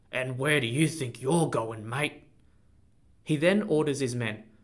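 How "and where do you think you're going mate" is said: with a grunt. The leader of the bad men, as his men pin qi down, grunting. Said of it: "The leader of the bad men grunts".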